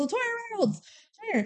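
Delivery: mock shouted call. Retelling how she calls the girl over: imitating a shout. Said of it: "They always shout it too".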